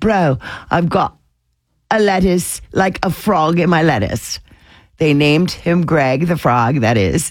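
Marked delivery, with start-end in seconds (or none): 0.0-4.4 put-on Australian accent. Retelling what an australian guy said, in an australian accent. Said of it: "in his Australian accent".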